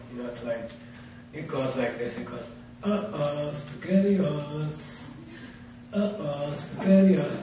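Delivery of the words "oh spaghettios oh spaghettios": tiny, soft, wee voice, very slow and drawn-out. Retelling a little voice he heard after months in there: tiny little voice. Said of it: "I hear this like little voice".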